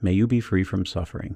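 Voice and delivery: ordinary talk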